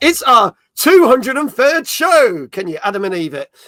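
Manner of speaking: announcer voice, loud and high-pitched. Host opening the show for the audience, in his best announcing voice. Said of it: "in my best announcing voice".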